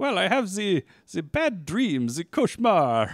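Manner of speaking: terrible fake British accent. Retelling what a man said about his sleep: bad british accent. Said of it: "That was the worst British accent".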